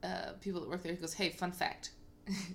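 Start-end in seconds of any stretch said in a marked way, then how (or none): none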